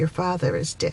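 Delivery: normal talking voice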